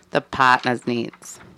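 Boston accent with dropped r's. Reading a definition aloud, repeating its last words: Boston accent. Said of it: "Are we doing a different accent now?".

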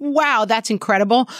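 ordinary talk, nothing marked

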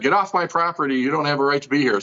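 ordinary talk, nothing marked

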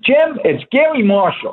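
put-on very high-pitched, slow Bronx accent. Retelling an unexpected phone call, a speaker voices the caller: Garry Marshall's Bronx accent. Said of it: "this very distinct Bronx accent".

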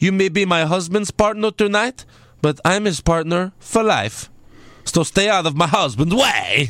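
put-on thick, laid-on Eastern European accent. Retelling a backstage line from Lana, imitating Lana's accent. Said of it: "That's how she talks".

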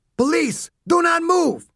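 very high, full-force screaming yell. A cop kneeling behind his cruiser door, screaming in his loudest cop voice. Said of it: "Sanchez screamed in his loudest cop voice".

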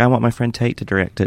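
put-on southern accent. Discussing a film, quoting the book's author as Kathryn Stockett in southern accent. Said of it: "That was my southern accent".

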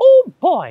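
squeaky mouse voice, very high and loud. Recalling what you would say for friends at the theme parks, doing a Mickey impression. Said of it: "I would do my Mickey impression".

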